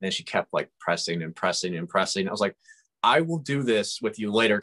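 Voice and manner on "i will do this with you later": acted, somewhat stern, firm, exasperated tone. Retelling answering a persistent five-year-old who kept pressing, retelling a stern reply. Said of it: "kind of sternly".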